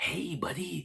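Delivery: very high, comic-book villain voice. Imitating people who call out to foreigners: Jack Nicholson Joker voice. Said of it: "like the fucking Jack Nicholson as the Joker".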